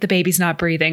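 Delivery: deadpan, flat, outwardly unbothered delivery. Retelling a film scene, quoting a character: imitating Aurora's non-emotional delivery. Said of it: "outwardly non-emotional".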